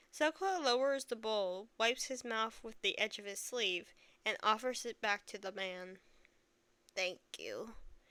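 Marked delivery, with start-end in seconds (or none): 7.0-7.8 timid, halting, small, hesitant voice. A character hands a bowl back to a man and thanks him, small and hesitant. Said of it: "in a small, hesitant voice".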